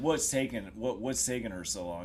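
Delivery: normal talking voice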